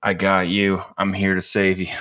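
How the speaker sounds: utterly flat, dead-level monotone delivery. Speaker retells what a man answered when asked for help: monotone voice. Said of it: "in the most monotone voice".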